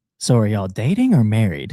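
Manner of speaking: imitated, put-on whisper. Retelling what the lady at the dinner table asked: imitating someone whispering. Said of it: "comes to whisper in my ear".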